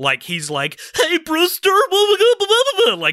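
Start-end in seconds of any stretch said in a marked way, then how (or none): 1.0-2.9 loud, very high, annoying, obnoxious voice. Describing a film character who talks like this: annoying Evil Ed voice. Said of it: "he talks like that the whole way through".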